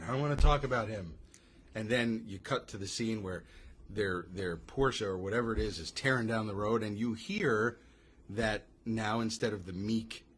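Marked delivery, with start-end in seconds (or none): 0.0-1.1 put-on thoroughly worn-out, fed-up exasperation. Retelling a movie scene, imitating exasperated Bert. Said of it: "Bert is just exasperated".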